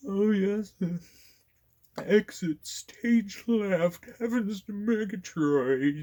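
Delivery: drawn-out, very high, stuffed-up cartoon voice. Imitating the audiobook voice actor doing his bit: congested Snagglepuss voice. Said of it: "dust off my congested snagglepuss".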